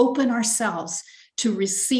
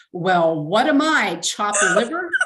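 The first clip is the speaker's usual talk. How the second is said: mock miffed, affronted tone. Retelling what an inner voice said: imitating a loud voice. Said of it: "an actual loud voice said".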